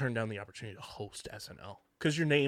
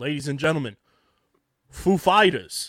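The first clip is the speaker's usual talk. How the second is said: booming stage announcer voice at full volume; 3 semitones higher, 9 dB louder than usual. Imagining introducing a band on SNL: Christopher Walken impression. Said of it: "I would love to do my best Christopher Walken impression".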